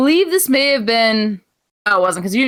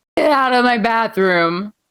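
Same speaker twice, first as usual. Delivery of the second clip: mock sloppy, heavily slurred, thoroughly drunk voice. Retelling what a drunk friend said: imitating a very drunk voice. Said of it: "in the drunkenest voice in the entire world".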